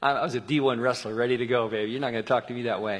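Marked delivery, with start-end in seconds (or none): none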